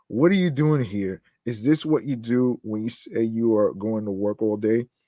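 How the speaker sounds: normal talking voice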